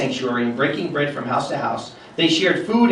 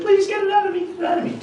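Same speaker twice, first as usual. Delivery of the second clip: put-on very high-pitched small little boy's voice. A speaker retells casting out a demon, voicing the man in a little boy's voice. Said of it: "a little boy's voice said".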